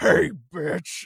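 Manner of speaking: dropped deep, rough and very loud. Retelling Freddy's first words to Dave, the speaker uses the deep Freddy voice. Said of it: "he just hears in his headphones this deep".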